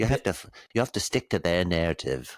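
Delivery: put-on British accent throughout the line. Mocking how other people talk, in a put-on British accent. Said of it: "in that British that British voice".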